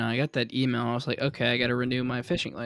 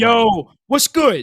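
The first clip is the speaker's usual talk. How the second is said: mock very loud, shrill, high-pitched, confrontational angry yell; 11 semitones higher, 12 dB louder than usual. Retelling how a guy greeted someone, imitating him saying it angrily. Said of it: "he kind of said it angrily".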